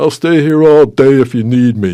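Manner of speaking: put-on booming, very loud New York accent. Retelling what a lifeguard said to an old man: new york accent. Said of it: "in that inimitable New York accent".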